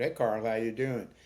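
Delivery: normal talking voice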